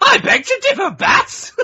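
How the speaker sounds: very high, very slow, loud drawl. Retelling turning around to a group and answering in the Joker voice. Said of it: "in the Joker voice that me and you do. I went".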